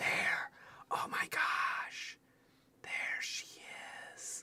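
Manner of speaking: barely audible, very quiet whisper. Adjusting the camera on a figure she fears will fall over: whispering. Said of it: "I'm whispering".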